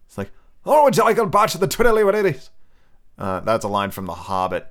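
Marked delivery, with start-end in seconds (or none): 0.6-2.5 put-on loud, high-pitched, belted Scottish accent. Doing the voices from Muppet Treasure Island, picturing Billy Connolly as a Scotsman. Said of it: "just kind of like a Scotsman".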